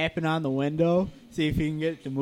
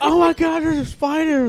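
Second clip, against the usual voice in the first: acted, very shrill, very high, loud, frantic panic; 11 semitones higher, 5 dB louder than usual. Retelling a waitress spotting a giant spider: imitating someone freaking out. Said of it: "looks over and freaks out".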